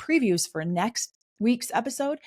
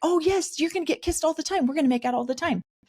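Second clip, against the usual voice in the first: high, rushed, exaggerated fake gushing excitement; 7 semitones higher than usual. Discussing a scene, mocking how manipulators exaggerate emotion: mock over-the-top excitement. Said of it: "by the over exaggeration of an emotion like that".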